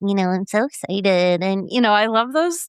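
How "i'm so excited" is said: put-on squishy little kid voice, slower. Describing an eight-year-old niece, the speaker imitates her: imitating niece's squishy voice. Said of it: "she still kind of has this squishy little voice".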